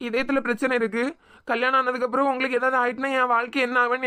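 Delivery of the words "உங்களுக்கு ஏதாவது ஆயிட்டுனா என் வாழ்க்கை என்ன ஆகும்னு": ordinary delivery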